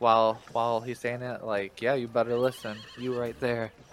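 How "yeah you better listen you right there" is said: small, quiet, bossy, scolding little voice. Voicing little creatures who point a finger at a big one: little Ugras voice. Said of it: "plant their hand on their hip and point a finger".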